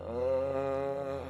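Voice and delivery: weak, groggy, drawn-out moan. Voicing a sister regaining consciousness: weak moan. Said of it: "and she moans".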